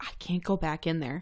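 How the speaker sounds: put-on mortified voice. Retelling what a mortified coworker said after learning the truth: imitating a mortified person. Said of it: "She is mortified".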